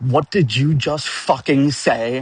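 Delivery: burst of pure rage. Retelling a game session, quoting the DM's reaction to him, imitating the DM's rage. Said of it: "looked at me wide eyed with rage".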